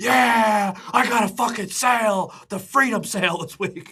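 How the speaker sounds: put-on loud, brash old-timer holler. Joking about an old guy in the grocery store: imitating an old guy. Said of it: "You're like the old guy that".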